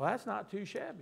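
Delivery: soft, slight Southern accent. Telling the congregation they are heirs of God: Southern accent slipping out. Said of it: "a little bit of Southern came out of me".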